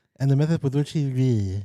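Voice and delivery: rattled off at top speed, as fast as possible. Repeating a tongue twister after being asked to say it faster, as fast as possible. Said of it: "Can you say it faster?".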